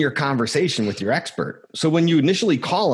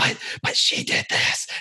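very slow, drawn-out scream delivered as a whisper. Describing how people react, imitating them screaming at the speaker in a whisper. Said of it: "They'll start screaming at me in a whisper".

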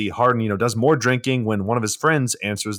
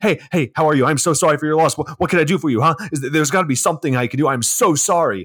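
mock overbearing, pushy sympathy, higher; 5 semitones higher than usual. Retelling someone barging into a grieving person's room: imitating pushy, in-your-face concern. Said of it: "all up in her face".

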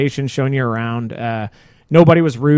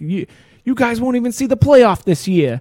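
put-on high-pitched New York accent; 9 semitones higher than usual. Retelling what a fan said while leaving a game, New York accent. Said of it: "something in a New York accent".

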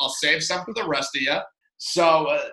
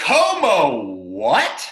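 high, slow, stunned disbelief. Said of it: "And I was like".

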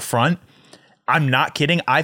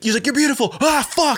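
put-on screaming, much higher and slower; 11 semitones higher than usual. Retelling a man who yelled at women and at himself, imitating someone screaming. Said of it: "he's like screaming at himself".

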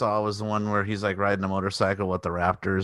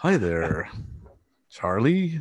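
very correct, put-on proper English accent. Describing a character, the speaker quotes him in a proper English voice. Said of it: "he has like a real proper voice and proper English".

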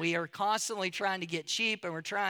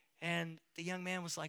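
ordinary talk

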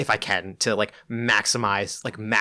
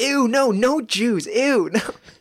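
put-on child voice, much higher, louder; 14 semitones higher, 4 dB louder than usual. Acting out a childhood reaction in a six-year-old child voice. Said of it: "It's like the six-year-old like voice".

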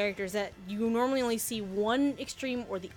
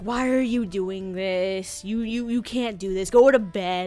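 put-on grouchy old man voice; 3 semitones lower, 7 dB louder than usual. Giving an example of a character, speaking as Zoroku, a grouchy stern old man. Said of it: "this grouchy, kind of like stern old man. Like".

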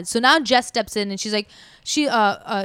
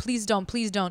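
put-on tearful pleading, quieter; 8 dB quieter than usual. Retelling a man on the ground crying, begging the pimp: imitating someone crying while pleading. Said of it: "the ground crying".

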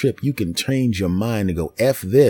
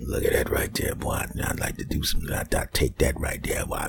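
breathy, leering, devilish whisper; 10 semitones lower, 8 dB quieter than usual. Voicing what a pervert hears watching TV, in a leering devil voice. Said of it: "you get that devil voice".

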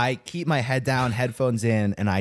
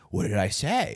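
mock put-out, injured, offended, affronted tone; 3 semitones lower, 4 dB quieter than usual. Retelling what a man on a scooter said after being told to pull over, mock-offended. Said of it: "Like acts all like offended".

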